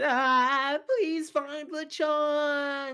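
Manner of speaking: screaming in a put-on character voice. Voicing a character who goes flying after a sneeze: screaming in character. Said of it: "He just screamed".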